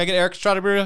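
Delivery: fast, high-pitched rushed speech, words tumbling out. Retelling ordering a burrito by talking fast, imitating own fast talking. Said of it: "I would talk so fast".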